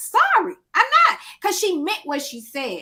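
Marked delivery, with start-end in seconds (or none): 0.0-1.2 high, loud, defiant tone. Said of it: "She say".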